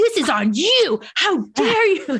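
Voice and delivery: very high, very drawn-out, slow yelling. Retelling confronting a gate agent about a wheelchair: retelling a yell. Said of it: "I'm just, like, yelling".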